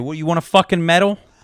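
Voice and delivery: fed-up, irritated, exasperated angry voice. Speaker acts out their reply to the third thanks for holding a door: retelling an angry retort. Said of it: "That's how angry we are".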